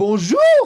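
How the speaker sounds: very loud, lively, enthusiastic delivery. Greeting yourself in the mirror in the morning: enthusiastic, well-pronounced bonjour. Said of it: "Un bonjour bien prononcé. Enthousiaste".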